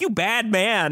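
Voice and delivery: stern scolding, as if to a naughty dog. Retelling a movie beatdown scene: imitating Chappie lecturing. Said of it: "lecturing him like a dog".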